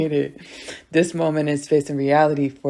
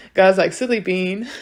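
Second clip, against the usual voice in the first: ordinary talk, nothing marked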